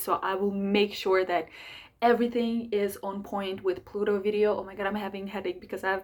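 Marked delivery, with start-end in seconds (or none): 4.6-6.0 very fast, over-caffeinated, rushed speech. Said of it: "I'm speaking so fast".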